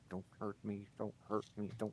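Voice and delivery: muttering under breath. Voicing a character during a game scene: muttering under his breath. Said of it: "As he's muttering under his breath".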